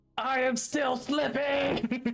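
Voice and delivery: shrill, very high yell. Voicing Zaxxas slipping from a ladder: yelling in character. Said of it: "You also hear Zaxxas yelling".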